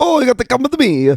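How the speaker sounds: very high exaggerated Italian accent. Telling how he mentioned a wedding, the speaker quotes a man in a Mario-style Italian accent. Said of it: "he sounds like Mario over there".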